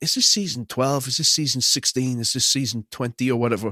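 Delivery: ordinary delivery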